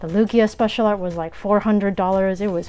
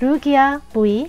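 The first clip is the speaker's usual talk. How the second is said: Korean-accented pronunciation, pitched up; 6 semitones higher, 5 dB louder than usual. Announcing a first Lugia pull: Korean-accented Lugia. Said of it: "That's how you pronounce it in Korean. Still Lugia, just with the Korean accent".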